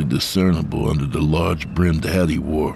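ordinary talk

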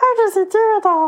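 bad, squeaky, very high-pitched voice. Asking how he does it all: bad Bobby voice. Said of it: "That was supposed to be Bobby".

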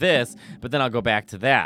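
ordinary delivery

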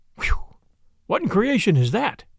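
ordinary delivery

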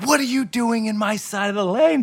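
put-on high yell. Telling of a head-on crash in a swimming pool lane, retelling a woman's yell. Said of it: "She yelled at him".

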